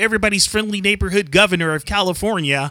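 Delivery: ordinary delivery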